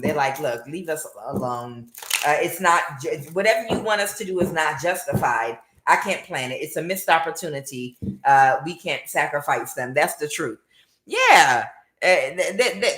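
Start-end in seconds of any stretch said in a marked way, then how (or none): none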